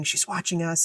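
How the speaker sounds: soft whisper. Retelling a moment in class, the speaker acts out Brian whispering. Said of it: "Brian's like whispering".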